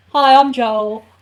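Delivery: very loud, belted-out put-on voice. Doing a best Joel and Leah impression, first the Joel impression. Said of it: "I'm gonna do my best Joel and Leah impression".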